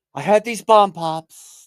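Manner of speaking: loud, slow, drawn-out booming politician voice. Showing how an impression could go, talking about popsicles: Donald Trump voice. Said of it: "you could definitely do Trump going".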